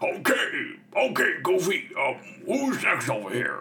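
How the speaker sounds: high cartoon bully voice. Imitating Pete, the bully from the Goofy movie: Pete voice. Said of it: "And then he's like".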